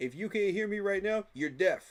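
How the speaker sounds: very loud, full-volume scream into mic. Answering a chat complaint about quiet audio: screaming into the mic. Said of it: "I'm screaming into the mic right now".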